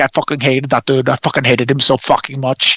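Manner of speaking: imitated Swiss German accent. Retelling what a swiss man said about a guy he hated, imitating a swiss german accent. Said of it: "he's got like a Swiss German accent".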